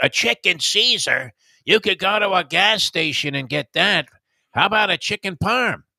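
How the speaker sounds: gruff New York woman's voice, drawn out. Retelling how the lady answered the speaker's order, imitating a gruff New York lady. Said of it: "She had one of these gruff voices".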